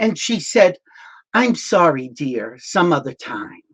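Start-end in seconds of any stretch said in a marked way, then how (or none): 1.3-3.5 polite but condescending, dismissive tone. Retelling how Sigourney Weaver refused a photo: condescending Sigourney Weaver impression. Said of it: "in the most condescending, dismissive way".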